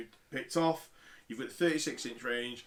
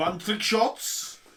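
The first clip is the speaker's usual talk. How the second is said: heavy German accent, laid on thick; 7 semitones higher, 7 dB louder than usual. Pronouncing a game item's name during play: heavy german accent. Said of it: "it's more of a heavy German accent now".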